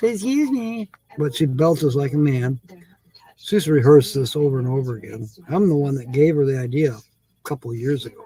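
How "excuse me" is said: small, dainty, tiny voice, pitched up. Retelling what Holly says after she belches: imitating Holly's tiny voice. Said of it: "she goes in a little tiny voice".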